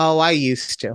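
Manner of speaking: put-on sassy, cheeky tone. Retelling how she answered without missing a beat: imitating a sassy reply. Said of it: "she's sassy".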